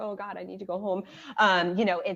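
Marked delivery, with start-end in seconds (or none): 0.0-1.0 put-on hysterical wailing through sobbing tears. Retelling sitting at the airport without a seat: imitating own hysterical crying. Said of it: "as I'm sitting there crying hysterically".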